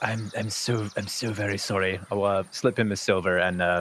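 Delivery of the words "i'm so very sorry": whispered very softly and much slower. At the bar, speaking to the bartender: whispered apology. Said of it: "I kind of whisper to the bartender".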